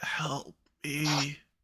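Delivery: hushed whisper. Voicing an unseen someone heard near a puddle of blood: whispering. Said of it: "you think you hear someone whispering".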